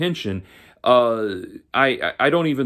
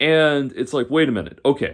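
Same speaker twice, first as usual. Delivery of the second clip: ordinary talk, nothing marked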